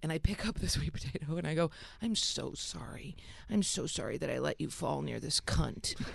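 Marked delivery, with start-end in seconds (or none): 2.0-5.9 whisper, lower in pitch, quieter and slower. Retelling apologizing to a dropped sweet potato, whispering to it. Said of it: "I was whispering to it".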